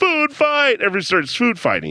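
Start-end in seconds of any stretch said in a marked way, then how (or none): 0.0-0.8 very high, flung-out, acted-out yell. Retelling a movie scene where Belushi yells out: imitating Belushi yelling. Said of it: "Belushi yells out".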